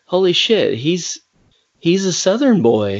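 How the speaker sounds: amazed, pitch moving widely.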